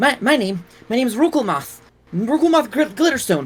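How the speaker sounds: very high, terrified, stumbling, stammering voice. Voicing a chained prisoner questioned by a player: incredibly fearful voice. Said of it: "in an incredibly feared, uh, fearful voice".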